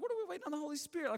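high, rushed, bewildered disbelief.

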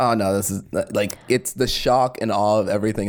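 normal talking voice

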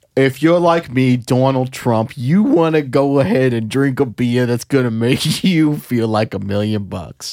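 salesy, commercial-style announcer pitch. Acting out a beer commercial: Donald Trump impression. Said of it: "Let's do a P B R commercial".

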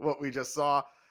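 normal talking voice

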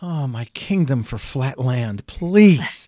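muttering under breath. Recalling years living on a rocky hill, the speaker retells muttering under breath. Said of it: "even if it was under my breath".

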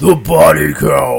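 very loud, rough, booming, dramatic trailer announcer voice. Repeating the episode topic after being told it sounded not epic: epic announcement. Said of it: "you made that sound really not epic".

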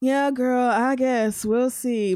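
defeated, deflated, let-down tone. Wrapping up talk about a couple's chances, sounding defeated. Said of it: "you sound defeated".

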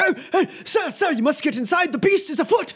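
very high-pitched, frightened, scared shouting. Game narrator voices a villager the player bumps into: shouting villager. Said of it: "one of the guys who's shouting".

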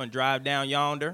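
stretched southern drawl. Told to just stretch his words, the speaker demonstrates a redneck drawl. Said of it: "I sound like a redneck".

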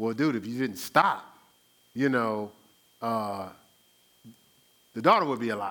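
mildly snide, needling, dry sarcastic acted tone. Retelling what someone might have said to Jesus: imitating a sarcastic edge. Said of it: "a little sarcastic edge".

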